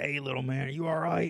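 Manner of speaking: put-on thick, heavy Baltimore accent with a growl. Acting out the man who came back to check on you, heavy Baltimore accent, crazy growl voice. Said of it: "He's got the real heavy accent, real crazy growl voice, you know, from Baltimore".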